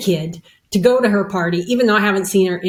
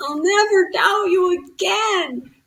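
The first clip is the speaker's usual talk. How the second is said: high, slow, weeping voice through tears; 11 semitones higher than usual. Retelling a vow made during a vision: imitating own tearful vow. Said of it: "And I'm crying and I say".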